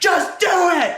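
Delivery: very high screaming. Telling how they begged the police to arrest them, retelling a scream at cops. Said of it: "I'm screaming at the cops to just arrest me".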